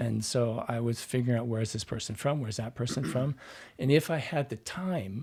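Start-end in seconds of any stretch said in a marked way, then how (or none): none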